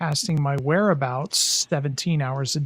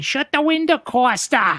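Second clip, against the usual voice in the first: put-on very high, shrill yell; 10 semitones higher, 4 dB louder than usual. Retelling a mother blowing into his room: imitating someone yelling. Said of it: "And she's yelling".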